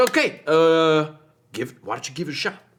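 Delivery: brisk, quick, hurried, rattled-along delivery. Running visitors through one of the big distillers you have set up, talking pretty fast. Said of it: "he's talking pretty fast".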